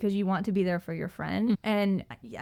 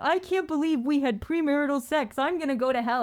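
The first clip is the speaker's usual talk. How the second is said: put-on panicking voice, higher pitched; 7 semitones higher than usual. Retelling Kyle calling about premarital sex: imitating Kyle freaking out. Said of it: "he's freaking out and he's like".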